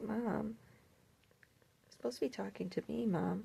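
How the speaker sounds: put-on hushed, very soft, high, slightly creaky little-girl voice. Speaking for the little girl who wants attention: voicing the little girl. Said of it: "She's like".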